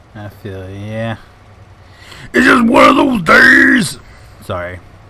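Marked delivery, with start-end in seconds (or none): 2.3-3.9 high, slow, loud frustrated shouting. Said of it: "That was kinda loud in the mic".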